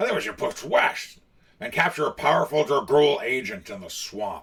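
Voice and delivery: loud orc voice. Reading out a story choice, doing the orc voice for Grick. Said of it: "I'm going to do the voice for the orc".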